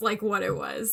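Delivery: ordinary talk, nothing marked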